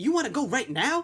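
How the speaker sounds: mock very high, loud, heated, flipped-out voice. Retelling a comedy skit where a character flips out: imitating someone flipping out. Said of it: "And he's saying it like that".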